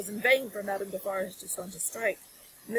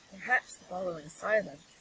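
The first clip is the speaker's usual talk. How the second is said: ordinary delivery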